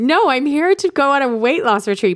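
high, slow voice, barely stifling laughter. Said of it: "couldn't say it with a straight face".

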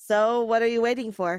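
plain reading voice

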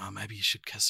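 very quiet, low, gruff, hushed half-whisper. Retelling a film scene's line: imitating Kal Penn's gruff half-whisper. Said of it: "gruff whis-, whispering".

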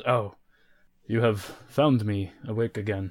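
worn-out, drained, weary giant's voice. Voicing a tired Goliath prisoner waking in a cage: voicing a tired Goliath. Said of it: "he turns right and he looks at you and he says".

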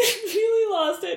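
helpless laughing, high-pitched and giggling.

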